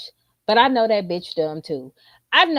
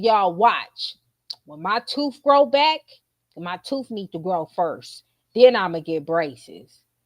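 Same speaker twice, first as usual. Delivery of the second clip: completely earnest, dead-serious, sure-of-herself tone; 3 semitones lower than usual. Retelling a daughter's claim about braces: imitating a confident straight-faced claim. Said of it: "She said it with her chest".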